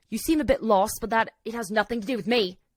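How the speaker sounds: put-on London Cockney accent. Retelling what he said to her, in a put-on cockney accent. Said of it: "I'm doing like a Cockney accent".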